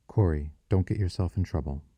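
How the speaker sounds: plain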